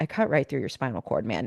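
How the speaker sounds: mock regretful, low, soft, sorry-sounding voice. Retelling the scene where Jake tells another character this, with Jake's mock-apologetic delivery. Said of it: "he's literally still kind of apologetic".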